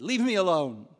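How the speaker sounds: very loud angry snap. Retelling a hooded stranger's reply when asked if he was okay, mimicking a very angry voice. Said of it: "in a very angry voice".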